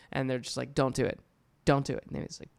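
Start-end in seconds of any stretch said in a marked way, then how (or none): 0.8-2.1 put-on sudden, blunt, intense tone, louder. Retelling how advisors suddenly shift cadence to warn: imitating a sudden intense warning. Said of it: "direct, intense eye contact".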